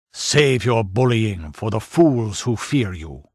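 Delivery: menacing growl. Narrator reading a swordsman's retort in a tense standoff, growling. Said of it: "he growled".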